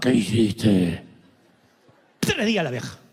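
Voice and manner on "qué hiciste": very low, slow, gravelly masked-hero voice. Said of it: "me hablaba como Batman".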